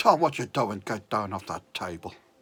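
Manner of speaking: put-on booming, very low Welsh accent. Recalling what a man would say to stop everyone, imitating a welsh accent. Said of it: "It was Welsh, like I say".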